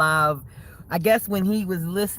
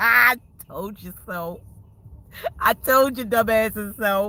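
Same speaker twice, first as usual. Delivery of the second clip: laughing while talking, much higher pitch; 4 semitones higher than usual. Talking to viewers about people who fell out, laughing while talking. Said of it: "so I just can't stop laughing".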